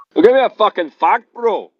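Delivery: very high, put-on Scottish accent. Retelling an argument, quoting Spake, imitating Spake's Scottish accent. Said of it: "he speaks with his Scottish accent".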